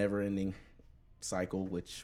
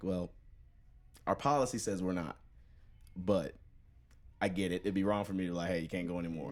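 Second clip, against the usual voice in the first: normal talking voice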